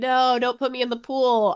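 high scream with all energy mustered, yet mild. Retelling a scene where a character is carried toward a pool; acting out a scream. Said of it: "musters up all of his energy to scream".

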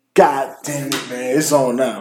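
ordinary talk

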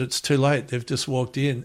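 usual speaking voice

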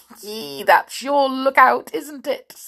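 gleeful, high voice cracking and breaking. Filch answers the students' fear of werewolves: voice cracking with glee. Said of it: "his voice cracking with glee".

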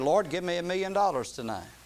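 plain

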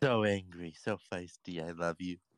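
put-on gushing, doting baby talk. Speaking to a very angry snail, baby talk. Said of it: "Are you baby talking".

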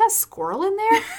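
high, loud, surprised and startled.

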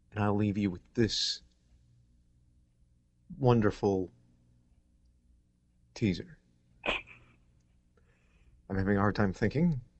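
speaking very slowly. Closing a podcast episode, the host leaves listeners with a teaser, speaking very slowly. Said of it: "That's why I'm speaking very slowly".

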